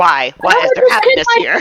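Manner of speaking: very high-pitched, grilling, interrogating voice. Imitating a kid who questions why people are laughing: Inquisitor-style interrogating voice. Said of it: "He sounds like the Inquisitor".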